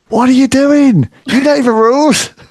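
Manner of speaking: mock very high, shrill, loud screaming. Retelling watching as a young fan: imitating own past screaming at the tv. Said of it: "screaming at the T V".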